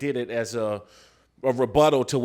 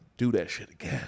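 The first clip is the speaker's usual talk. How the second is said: hushed, quiet whisper; 5 semitones lower, 6 dB quieter than usual. Retelling what the coach said after a big hit: imitating a whisper. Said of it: "kinda whisper to me".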